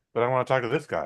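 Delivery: friendly little dog voice. Retelling a movie trip, voicing a friendly little dog: voicing a friendly little dog. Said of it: "the thing's just like".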